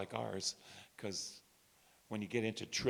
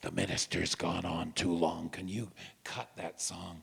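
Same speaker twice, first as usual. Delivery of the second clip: put-on whispering; 3 semitones lower, 5 dB louder than usual. Retelling what someone whispers to the player during a service: imitating someone whispering.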